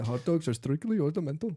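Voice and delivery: admittedly poor, badly done put-on Indian accent. Quoting a line picked up from The Simpsons, Indian accent from The Simpsons. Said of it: "I can't do a good ac- Indian accent".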